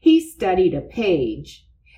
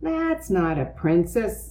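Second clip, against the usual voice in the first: plain reading voice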